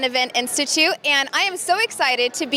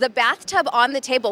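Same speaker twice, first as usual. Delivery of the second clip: ordinary talk, nothing marked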